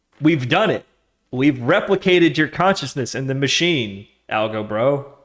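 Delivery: booming voice, as if from above. Speaker imagines a voice coming down from above, booming voice. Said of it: "a booming voice came down".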